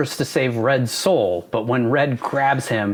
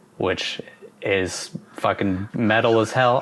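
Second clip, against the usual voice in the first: ordinary delivery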